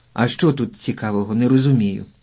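ordinary delivery

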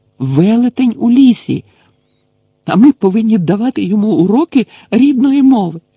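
very high-pitched, shrill, frantic, feverish outcry. Hermione, walking away from Hagrid, answers Harry with a feverish exclamation. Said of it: "гарячково вигукнула вона".

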